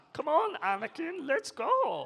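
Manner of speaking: Icelandic-accented speech. Answering a request to speak with an Icelandic accent: attempted Icelandic accent. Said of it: "I don't know if that's Icelandic".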